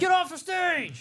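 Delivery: very high, jeering heckler voice. Speaker plays a heckler at an open mic, open-mic heckler impression. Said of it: "you were doing a heckler".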